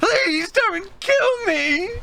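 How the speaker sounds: crying, very high, tearful begging. Game master voicing a cowering character begging the players: tearful pleading. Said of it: "looking at you teary-eyed".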